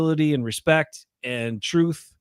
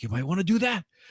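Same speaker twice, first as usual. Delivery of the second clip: very energetic, suspense-building, suspenseful delivery; 4 semitones higher, 5 dB quieter than usual. Retelling what a teacher said while filming, in a put-on energetic suspenseful voice. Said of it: "talk in this very energetic, kind of suspenseful voice".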